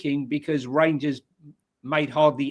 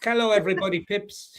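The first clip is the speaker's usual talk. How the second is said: put-on Greek accent, pitched up; 6 semitones higher than usual. Asked to do a Greek accent for a greeting: Greek accent. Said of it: "can you do a Greek accent?".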